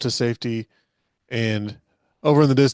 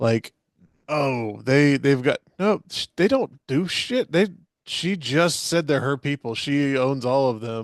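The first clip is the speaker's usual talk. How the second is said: plain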